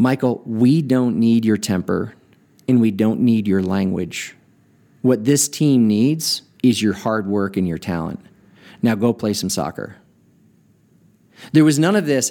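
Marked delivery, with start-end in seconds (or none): 0.0-10.0 said in the most gentle way. Retelling what the coach said after a foul: imitating a gentle coach. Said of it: "he said in the most gentle way".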